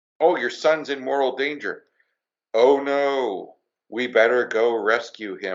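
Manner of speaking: zero-feeling, emotionless cartoon-style line reading. Mocking a cartoon dad's reaction to his son's danger: imitating an emotionless cartoon dad. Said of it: "there's no emotion".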